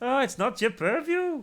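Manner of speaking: very high, loud, shrill, poor put-on Scottish accent. Speaker discussing a football match says a word the way Malcolm Tucker would: bad Malcolm Tucker impression. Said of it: "That's not a very good Scottish accent".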